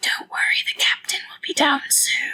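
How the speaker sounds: close-in, hushed whispering. Playing a character bending down to a nervous prisoner: whispering in his ear. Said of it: "whisper right in his ear".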